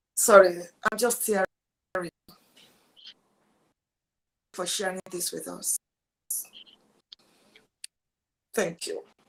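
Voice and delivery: emotional, collecting oneself. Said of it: "I need to put myself together now".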